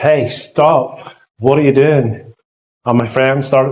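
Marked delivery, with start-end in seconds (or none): 0.0-2.3 put-on child voice, startled, shocked, slow shout. Recalling being shocked at ten years old and beginning to shout, retelling a shout. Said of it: "I began to shout".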